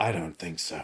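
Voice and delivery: dramatic movie-trailer narrator voice, low and hushed. Recapping a story, voicing Raiden facing a crowd of goons, in Raiden trailer voice. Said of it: "trailer voice a little bit".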